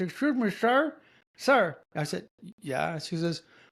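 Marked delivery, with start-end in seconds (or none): 0.0-1.8 slow, high speech with cigarette in mouth. Retelling a woman at a market calling to him, imitating a woman with cigarette in mouth. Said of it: "she's talking like this".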